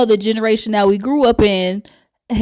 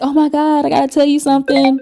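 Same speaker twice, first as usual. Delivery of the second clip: put-on faked excitement, higher pitch; 5 semitones higher than usual. Retelling a reality show scene: imitating Jackie acting all excited. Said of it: "Jackie pretends to be all excited".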